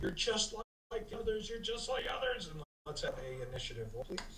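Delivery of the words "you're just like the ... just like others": shrieking high scream, voice climbing upward. A game master voices a crying creature after a command spell, screaming, voice climbing. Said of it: "she starts screaming, as her voice climbs".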